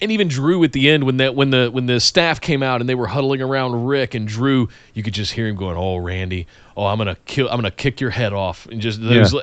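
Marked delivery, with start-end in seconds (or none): 5.8-8.7 put-on quiet voice, much lower, slower. Recalling a performer huddled with staff at the end of the show: retelling a quiet threat. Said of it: "he was saying it quietly".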